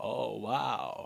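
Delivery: cool, creaky, rough cool-guy voice. Recalling the group reviewing footage together, Ron Moorhead's cool voice. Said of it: "in his like cool voice".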